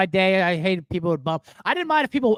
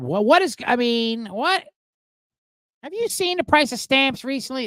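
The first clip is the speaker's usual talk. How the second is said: put-on grumbling like a fed-up old man; 4 semitones higher than usual. Switching from a Seinfeld voice to an Andy Rooney voice. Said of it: "I'm Andy Rooney voice".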